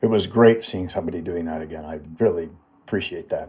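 ordinary delivery

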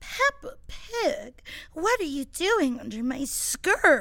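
sexy, drawn-out voice. Retelling what he said, in a mock-sexy voice. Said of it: "say it in a sexy voice".

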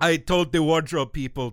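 put-on Austrian accent. Retelling Arnold's answer in a behind-the-scenes clip: weird Arnold Austrian accent. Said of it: "my Austrian accent is weird and nonsensical".

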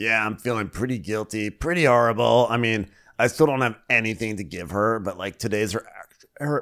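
put-on voice, faltering and breaking off at end. Recapping a scene that cuts to Kyle feeling guilty: Kyle impersonation. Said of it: "I'm choking on my Kyle impersonation".

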